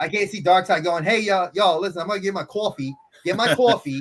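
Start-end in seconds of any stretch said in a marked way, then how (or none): 1.0-4.0 put-on New York accent. A New Yorker imagining a villain's lines as Darkseid with a New York accent. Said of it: "I'm a New Yorker that's got a New York accent".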